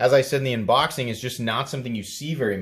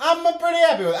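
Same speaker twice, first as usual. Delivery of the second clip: very high cartoonish character voice, pitched way up; 3 dB louder than usual. Giving a verdict on a knife's weight: Super Mario voice. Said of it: "I did the Super Mario voice there".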